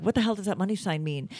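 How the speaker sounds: normal talking voice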